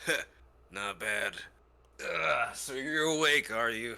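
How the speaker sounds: words spoken through a half chuckle. In a role-play scene, a character answers another player with a half chuckle while talking. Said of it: "I give like a half chuckle".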